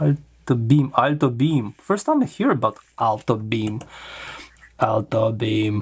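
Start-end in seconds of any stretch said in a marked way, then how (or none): 4.8-5.8 mechanical robot voice. Looking over a product's parts, saying the brand name in a robotic voice. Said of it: "Robotic voice here".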